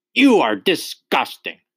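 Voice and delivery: loud, high, stern bellowing voice. Narrator reading a story, the Trunchbull replying: Trunchbull bellowing. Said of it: "the Trunchbull bellowed".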